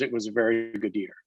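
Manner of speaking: plain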